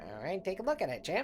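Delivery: eighties mobster voice. Answering the player who picked the rusty bag: eighties mobster voice. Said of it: "Why does this guy sound like an eighties mobster?".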